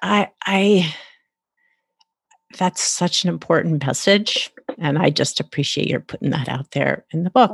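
choked up, emotional, feeling welling up. Speaker thanking an author for a message in their book, choked up. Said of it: "I'm getting choked up right now".

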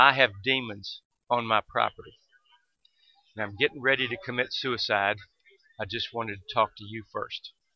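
play-acted, utterly serious delivery with no joking. Retelling a man's words about demons and suicide: imitating a dead serious tone. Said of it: "he looks at me dead serious and says".

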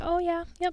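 mock nonchalant tone. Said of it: "just nonchalantly just be like".

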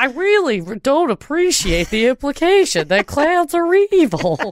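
very high, slow, deliberate, drawn-out speech. Reacting to a story about evil clowns, talking like Glenn Goldberg. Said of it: "I can't stop talking like Glenn Goldberg".

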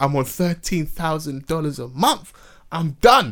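slow, acted-out crying voice, sobbing through tears. Retelling a video of someone's complaint: imitating someone crying. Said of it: "he was crying like".

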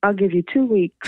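put-on cheeky, mocking tone. Retelling what he said after handing over the cassette: imitating a cheeky remark. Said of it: "with a very cheeky look, and he just went".

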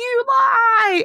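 very high, loud, shrill scream, lie drawn out. Retell a reality tv scene with a daughter crying and her mom in the background, imitating a mom screaming. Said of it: "her mom's in the background screaming like".

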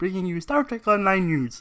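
high puppet voice. Joking about flailing while reading the news: Kermit the Frog voice. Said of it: "Kermit the Frog here".

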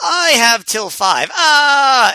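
very slow, high agonized cry, long "ah". Describing a wrestling match, the speaker quotes Cabana as he is pulled back: imitating Cabana yelling in pain. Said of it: "he yells in pain".

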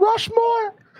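very high-pitched exclamation, voice shooting way up. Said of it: "do you hear how high my voice is?".

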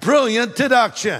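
sarcastic, insincere delivery. Answering an argument that the speaker has just quoted: sarcastic. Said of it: "I'm being sarcastic".

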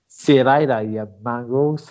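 attempted, fake New Zealand accent. Challenged to prove he can do it, attempting a New Zealand accent. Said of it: "let's see if you can do New Zealand".

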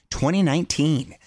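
ordinary delivery

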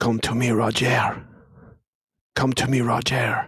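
beastly hyena creature voice. Voicing a furious hyena creature calling to Roger: hyena creature voice. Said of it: "his hyena mouth and back. And he says".

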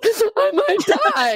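very high, tearful, sobbing crying voice. Retelling answering a sponsor about not drinking, retelling own past crying. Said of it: "I'm, like, crying".

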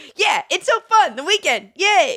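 high-pitched, slow, put-on Jersey accent. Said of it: "I do not sound like that".

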